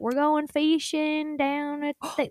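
put-on real Indiana accent with diphthongs dropped. Imitating the extended family back home, with relatives' Indiana accent. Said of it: "they have, like, real accents".

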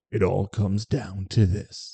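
half-hearted, slow, weak film-trailer announcer voice. Promoting a championship game on saturday: movie-opening voice. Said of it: "you do like the movie opening".

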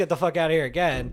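acted-out screaming. The speaker retells what a woman screamed at him, retelling a scream. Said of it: "she screams".

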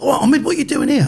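surprised high voice.

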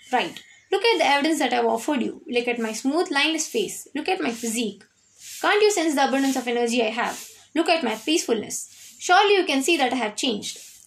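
ordinary delivery

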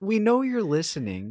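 high, pushy, aggressive delivery. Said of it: "My call to action was a little bit aggressive".

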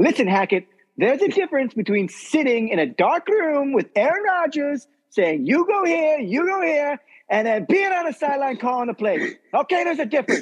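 voice pushed way up high. Retell to your co-speakers a point you heard him make, in a Mad Dog Russo impression. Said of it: "I'm going to do my Mad Dog impression".

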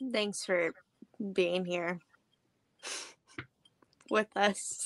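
utterly insincere, ungenuine tone. Thanking the audience when asked for last words: insincere tone. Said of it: "You genuinely couldn't have sounded less genuine".

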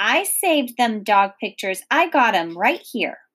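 ordinary talk

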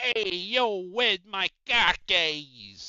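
put-on Boston accent, loud. Asked to give it a go, the speaker tries out a Boston accent. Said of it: "What's the Boston accent? Give us a go".

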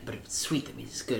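mock creepy whispering. Retelling a neighbor offering a japanese plum: imitating a creepy whisper. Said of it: "Why are you whispering the whole time".

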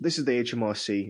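robotic, machine-like automated recorded-message voice. Describing a scam call pretending to be the tax office: robotic voice. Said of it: "It's a robotic voice".

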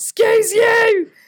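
piercing scream, very high and very loud. Retelling yelling at neighbours on the fire escape: retelling own scream. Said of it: "I screamed".

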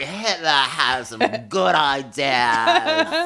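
mock-slurred, put-on slurred delivery. Quoting what a man said at a cafe, imitating slurred speech. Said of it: "it was a little slurrier".

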